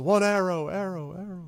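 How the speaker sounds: airy, very high-pitched voice. Narrator voicing a figure the players can hear, airy voice. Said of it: "you hear sort of an airy voice".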